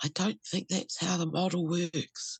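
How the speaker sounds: imitated little whisper. Retelling what a quiet inner part said: imitating a quiet little whisper. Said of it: "in a very quiet little whisper way".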